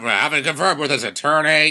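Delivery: put-on audio captcha recording readout voice. Guessing an audio captcha's words, a player does an audio captcha voice impression. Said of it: "That's my best impression".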